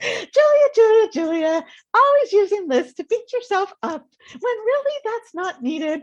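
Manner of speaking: very high, prim and loud voice. Retelling what he said while driving, the speaker slips into a Church Lady voice. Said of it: "he goes into church lady voice".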